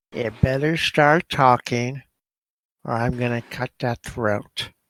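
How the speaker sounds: full goblin voice with a menacing edge. Game narration, Grekel threatens Takeda: Grekel's full goblin voice. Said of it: "go full goblin voice on him and say".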